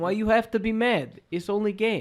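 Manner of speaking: high, broken-English video-game meme accent. Quoting the video game meme line: video game meme accent. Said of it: "This accent".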